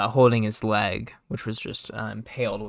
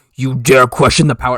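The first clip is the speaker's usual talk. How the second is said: big, loud, booming voice; 2 semitones higher, 13 dB louder than usual. Voicing a character mid-scene, in a booming voice. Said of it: "in a booming voice".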